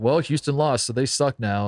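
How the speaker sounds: ordinary talk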